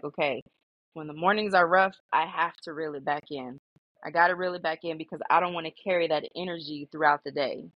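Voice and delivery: ordinary talk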